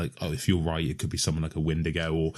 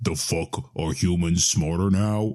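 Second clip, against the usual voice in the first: terrible rasping, resonant, grinding voice; 3 dB louder than usual. Narrator reads an alien being's one sentence, terrible resonant grinding voice. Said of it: "in that same terrible, resonant, grinding voice".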